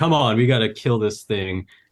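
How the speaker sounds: put-on annoyed, disappointed, mad voice. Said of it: "he's super disappointed and mad".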